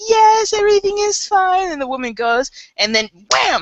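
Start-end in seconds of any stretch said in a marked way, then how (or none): 0.0-1.7 very high, slow, fake-nice mother voice. Retelling a mother answering a store clerk from the dressing room, mimicking her sweet voice. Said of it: "all sweet".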